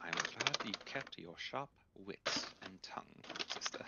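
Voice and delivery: soft, hushed whisper. Voicing a character speaking to a player while passing guards: whispering. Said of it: "he also whispers to you".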